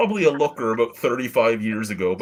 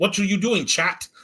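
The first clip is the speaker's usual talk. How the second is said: put-on Eastern European accent impression; 9 semitones higher than usual. Retelling how Donata used to tease the speaker: imitating Donata's Eastern European accent. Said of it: "just the Eastern European accent".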